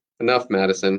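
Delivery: ordinary delivery, nothing marked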